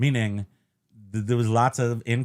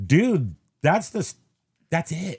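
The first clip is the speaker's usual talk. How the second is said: ordinary talk, nothing marked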